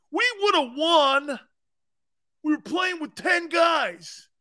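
mocking, teasing caricature fan voice, pitched high. Speaker addresses a Niners fan, doing an impression of him and his fans: impression of a Niners fan. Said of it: "Here's my impression of you and your fan base".

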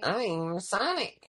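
put-on childish voice, sounding like a kid on a voice changer. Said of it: "Sonic sounds like a freaking kid that used voice masking".

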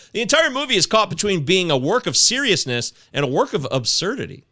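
plain

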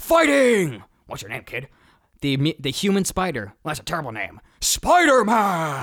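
ring-announcer voice with big pitch swoops. Retelling a movie cameo as the ring announcer: Bruce Campbell impression. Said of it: "That's a pretty good Bruce Campbell".

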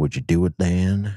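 slow, creepy storyteller voice. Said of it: "that's a really creepy voice".

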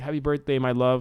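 normal talking voice

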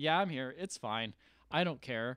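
normal talking voice

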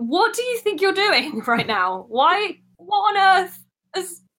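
very high-pitched, baffled, bewildered shouting. A tabletop player, in character, yells at another character, confused yelling. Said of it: "I'm going to yell at her".

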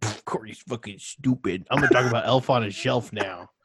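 scornful, rude, dismissive tone. Retelling how the others ignored a joke: imitating others being rude. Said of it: "and you were like".

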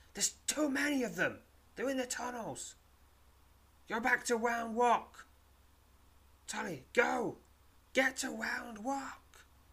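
very high, loud cry with the voice breaking. Glancing back at the darkness, he warns a woman to go back; crying out, voice cracking. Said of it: "he cries, his voice cracking".

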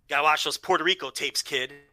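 ordinary talk

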